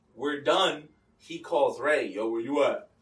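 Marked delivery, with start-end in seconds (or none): 2.1-2.8 put-on deep male voice, much lower in pitch. Retelling how Steve phoned Ray after recording, imitating Steve's deep voice. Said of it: "with his deep ass voice".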